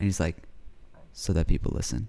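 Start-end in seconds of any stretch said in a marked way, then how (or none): 1.1-2.1 barely audible, soft-spoken, very quiet and short. Retelling meeting a guy named Storm, imitating someone talking very quietly. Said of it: "Why do you talk so quietly?".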